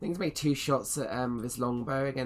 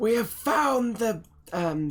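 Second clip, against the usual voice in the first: shrill, very high elf shout at full volume; 9 semitones higher, 8 dB louder than usual. Narrating a game scene, voicing an elf heard calling out: shouting elven voice. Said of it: "like elven voice just shout out".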